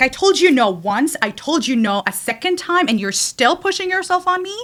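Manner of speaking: yelling, pushing back. Retelling what was said to a man who ignored her no: imitating own yelling. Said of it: "I yelled for, like, sixty seconds".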